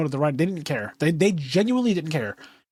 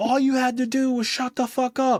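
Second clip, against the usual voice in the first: put-on screaming, pitched up, in-your-face; 7 semitones higher than usual. Retelling a man yelling at a dead woman's body, imitating someone yelling. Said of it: "he's yelling at her as she's dead".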